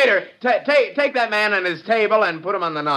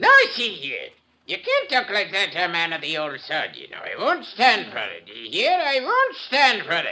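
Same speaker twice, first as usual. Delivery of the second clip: put-on swooping, sing-song old film actor voice, pitch rising and falling; 3 dB quieter than usual. Doing impressions of movie stars for a nightclub audience: Barry Fitzgerald impression. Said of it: "Barrymore Fitzgerald".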